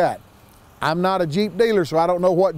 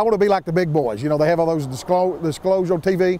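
ordinary talk

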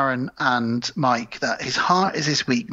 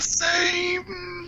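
higher, quieter, put-on ominous English voice; 4 dB quieter than usual. Asked to do it again, delivering the warning line: Donald Pleasence voice. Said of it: "doing Donald Pleasance".

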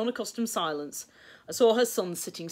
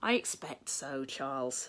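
gentle, kindly, slow tone; 4 semitones lower, 8 dB quieter than usual. Answering another speaker's question, in a kindly voice. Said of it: "said William in a kindly voice".

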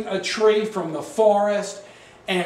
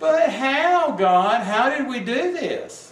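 very slow, put-on, whiny little voice; 4 semitones higher than usual. Acting out people questioning god, in a put-on whiny little voice. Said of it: "I have to do it with a whiny little voice".

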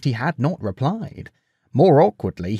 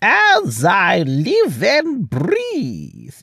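put-on reedy, high old voice with swinging, swooping pitch; 7 semitones higher than usual. An old king cuts off a bowing young visitor's introduction, reedy Nestor voice. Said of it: "interrupted a reedy voice".

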